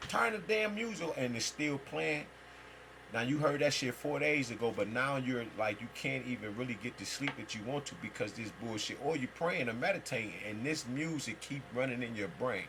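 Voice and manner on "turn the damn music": high-pitched, irritated tone. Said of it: "and you like".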